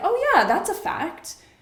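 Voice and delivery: high-pitched, eager, gullible-sounding voice. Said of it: "my brain is like".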